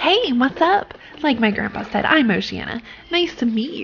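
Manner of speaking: snobbish, superior, stuck-up, snooty tone. Speaker voices a character introducing herself: stuck-up Oceana voice. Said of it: "I instinctively gave her a really stuck-up sounding voice".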